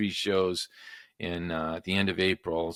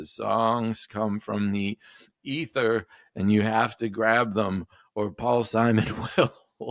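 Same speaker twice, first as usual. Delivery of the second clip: slow, shaky, boozy voice; 4 semitones higher, 4 dB louder than usual. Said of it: "he's got the shaky voice".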